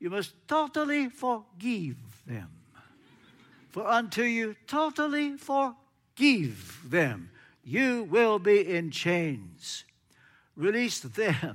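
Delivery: put-on Romanian accent, slow. Recalling Joseph's reply to your confession of one more thing, you can hear him now, in Joseph's Romanian accent. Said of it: "I can hear him now in his Romanian accent".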